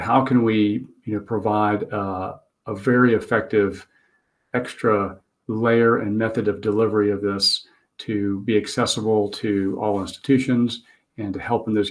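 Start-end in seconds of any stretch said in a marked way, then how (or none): none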